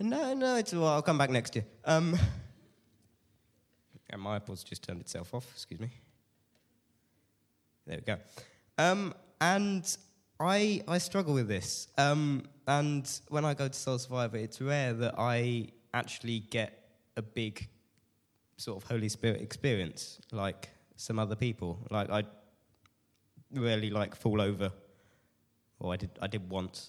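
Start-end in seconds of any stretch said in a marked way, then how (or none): 0.0-1.6 high-pitched mock pleading tone. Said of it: "there's just me going".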